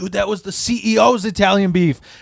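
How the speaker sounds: acted-out angry outburst, pitched high. Retelling how a manager reacted to a taken food tray: imitating an angry manager. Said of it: "and he fucking flipped".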